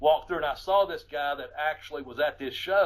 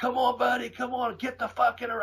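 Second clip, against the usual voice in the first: loud, high-pitched shouting; 8 semitones higher than usual. Retelling jumping out at a fight by the ring: imitating own past yelling. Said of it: "I started yelling".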